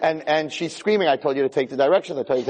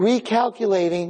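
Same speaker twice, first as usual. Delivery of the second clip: put-on gentle English-accented GPS voice, higher pitch; 4 semitones higher than usual. Acting out the GPS voice after a missed turn: nice feminine English accent. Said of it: "Nice, feminine, with an English accent".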